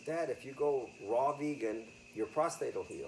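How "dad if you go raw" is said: plain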